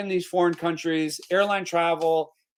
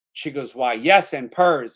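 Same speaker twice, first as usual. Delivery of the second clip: ordinary talk, nothing marked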